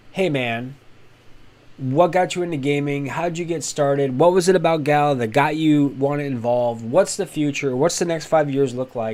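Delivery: plain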